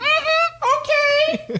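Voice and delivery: grating, very high-pitched, irritating mm-hmm. Retelling what a job expo attendee said: imitating an irritating voice. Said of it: "That's his exact fucking voice".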